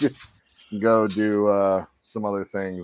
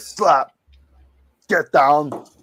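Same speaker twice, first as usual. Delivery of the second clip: bad put-on Austrian accent, higher and louder; 7 semitones higher, 5 dB louder than usual. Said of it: "Everybody's got a bad Arnold impression".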